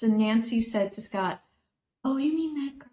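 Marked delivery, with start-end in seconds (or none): 2.0-2.7 very quiet, small, high-pitched murmur. Retelling what a woman said on first meeting: imitating Nancy's very quiet voice. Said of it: "you have to say that out loud 'cause no one can hear it".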